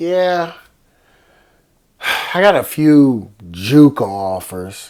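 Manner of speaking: put-on very slow, loud, drawn-out, careless dismissive tone. Retelling what a young player said about his offers: imitating a dismissive tone. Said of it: "And he said it like that".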